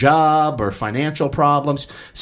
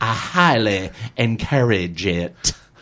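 deep, very slow, deliberate character voice, words stretched; 4 semitones lower than usual. Quoting what he goes on to say, in a Zig voice impression. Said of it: "in that Zig voice of his, he goes".

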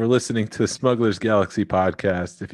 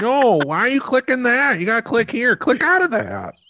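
mock old-person voice, higher; 14 semitones higher, 3 dB louder than usual. Joking that the two of them sound really old: imitating old people. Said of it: "We sound like".

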